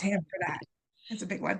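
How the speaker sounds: soft, close to crying, holding it in. A guest gives kudos to someone who understands them, about to cry. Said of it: "I'm gonna cry".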